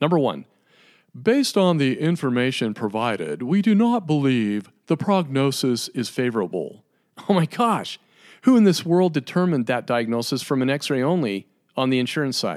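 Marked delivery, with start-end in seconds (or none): 1.2-6.8 mocking, playful, put-on fun voice. Reading aloud wording seen on insurance EOBs, in a fun voice. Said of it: "I'm going to go into my fun voice each time I read these".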